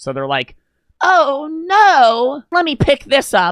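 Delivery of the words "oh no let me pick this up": very high, very slow in-character performer voice. Acting out a Disney performer staying in character: in-character Disney performer voice. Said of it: "they maintain character".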